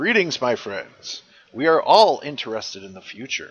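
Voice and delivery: booming, very loud narrator voice. Voice Scott Pocket's greeting to his friends in his best Scott Pocket narrator voice. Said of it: "in his best Scott Pocket narrator voice".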